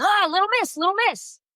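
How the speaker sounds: put-on very high-pitched mocking shout. Retelling how her neighbor yelled at her over a package, imitating a neighbor yelling. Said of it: "he starts yelling at me".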